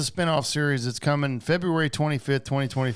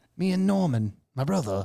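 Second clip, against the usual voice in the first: very bad, fake put-on British accent; 2 semitones higher than usual. Imitating an English actor talking about himself: bad British accent. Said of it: "the worst British accent ever".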